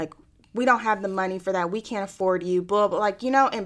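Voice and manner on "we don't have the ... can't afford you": put-on harsh, aggressive tone. Retelling what she said about the money, imitating someone aggressive and harsh. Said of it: "really aggressive and really harsh".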